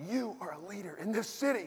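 high-pitched, scolding yell. Retelling how a lady at a restaurant scolded: imitating someone yelling. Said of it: "she's yelling at me".

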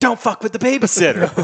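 very high, shrill, full-lung, top-of-the-lungs shriek. Retelling a sudden outburst while eating with family at Papagino's: retelling screaming at top of lungs. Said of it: "at the top of my lungs, I start screaming".

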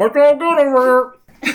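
very high, loud voice, talking through a mouthful. Acting out the listener answering the officer of the watch, mimicking a full mouth. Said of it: "your mouth full of pizza".

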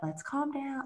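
soft, hushed, soothing, almost zombie-like calm voice. Retelling how she calmed crying little ones, in a soft, calming voice. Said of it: "in a really soft, like calming, almost like a zombie voice".

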